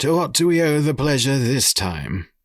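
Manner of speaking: gruff voice with a slightly high pitch. Narrator reads a council member addressing Roger, in a gruff voice. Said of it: "his gruff voice".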